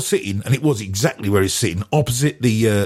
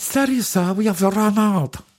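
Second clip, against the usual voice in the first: put-on woman's voice, much higher pitch; 11 semitones higher than usual. Retelling his exchange with a woman, paraphrasing her lines: imitating her voice. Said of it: "I'll try and do her voice".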